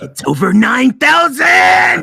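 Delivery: slow, very loud, high, rough bellowing yell. Answering a chat request for a Vegeta impression.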